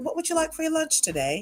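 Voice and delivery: put-on English accent. Retelling taking a customer's lunch order, in an English accent. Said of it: "I did an English accent for a whole year".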